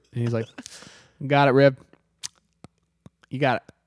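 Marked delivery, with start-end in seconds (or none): 1.3-3.7 reassuring, breezy, encouraging character voice. Retelling how the bass player answers a bandmate: imitating the bass player. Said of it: "Great impression".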